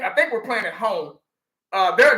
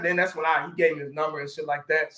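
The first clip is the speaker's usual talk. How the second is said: usual speaking voice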